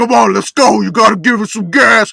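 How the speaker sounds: put-on overtly New York accent, very loud, rough hollering. Speaker imitates a Staten Island guy yelling about the game: overt New York yelling. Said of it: "like yelling, like very, very overtly New York".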